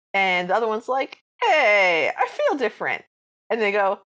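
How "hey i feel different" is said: put-on, unhurried, sing-song Brooklyn accent. Speaker acts out a cartoon character speaking to another character; put-on new york accent. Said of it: "they've all got like Brooklyn accents or New York accents".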